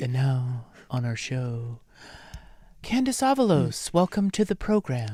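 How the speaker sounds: fake calm radio announcer tone. Co-host mock-introducing a guest on their show in an OPB radio host voice. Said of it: "I love the OPB voice".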